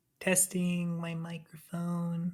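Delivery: barely audible, very quiet, hushed whisper. Testing a microphone at the start of a call: whispering. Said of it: "only 'cause you were whispering".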